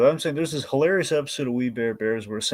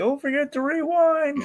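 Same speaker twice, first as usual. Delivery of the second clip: put-on tiny, very high-pitched little kid voice. Recalling a line heard spoken in a little kid's voice: little kid voice. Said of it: "hearing like the little kid voice".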